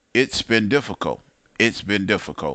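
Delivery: ordinary delivery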